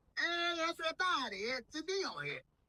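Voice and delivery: very high, tiny talking dog voice.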